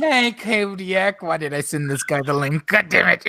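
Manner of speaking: loud, exasperated mock regret.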